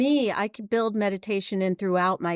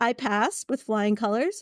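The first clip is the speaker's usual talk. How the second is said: normal talking voice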